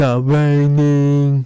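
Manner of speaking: slow, loud, stretched-out ring announcer call. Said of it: "Why does he say it like that".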